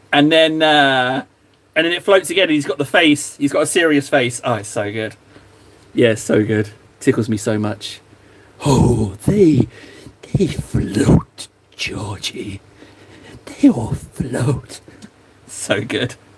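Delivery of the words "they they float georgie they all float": slow, hungry, predatory voice. Acting out a figure luring a kid, in a hungry impression voice. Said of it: "I like doing that impression because you have to make the voice sound like it's pretty hungry".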